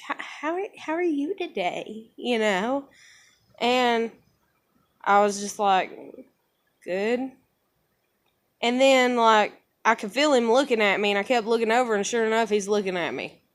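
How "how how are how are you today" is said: odd, awkward, stumbling voice, high and soft. Retelling a man greeting the speaker, imitating a weird voice. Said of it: "that weirdness in the voice".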